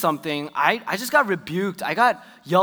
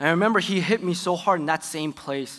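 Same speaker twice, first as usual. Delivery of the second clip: ordinary talk, nothing marked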